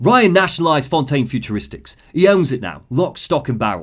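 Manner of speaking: bad, middling, generic put-on English accent. Reading a character's quoted audio log in a crappy generic English accent. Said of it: "Generic, middling, crappy English".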